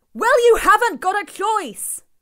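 very high, very loud shouting. A man shouts over a woman who is crying out in pain: shouting over her. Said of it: "Honno shouted".

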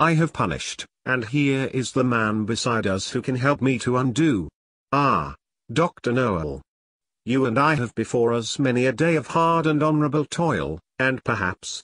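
usual speaking voice

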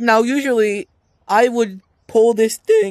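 voice breaking and cracking, high and loud. A speaker explains what they would usually do, voice cracking. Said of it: "Voice crack".

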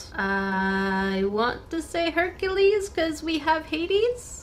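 skeptical, unsure, high-pitched rising tone. Guessing which Disney villains appear, speak skeptically with a high-pitched voice. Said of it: "I say skeptically with a high-pitched voice".

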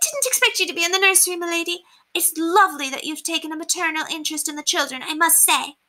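high, squeaky, breathless housemaid voice. Narrator voicing a young housemaid addressing her lady, high squeaky voice. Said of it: "her high voice squeaky as a fiddle and her cheeks flushed from running up the stairs".

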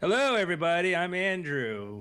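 classic on-air radio announcer voice. Andrew says hello during the group sound check in a radio voice. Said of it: "With my radio voice".

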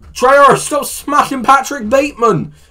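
shrill, full-volume, very high-pitched scream. Asked to do the Dan voice screaming, he does the intro: screaming Dan voice. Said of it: "Can you do the Dan GM voice screaming".

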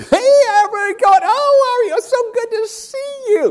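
very high, loud, bubbly, bursting-with-life exuberance. A speaker imitates an author greeting an audience, Bob Goff impression. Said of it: "that's the best impersonation I could do".

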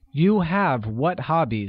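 usual speaking voice

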